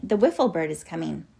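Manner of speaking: usual speaking voice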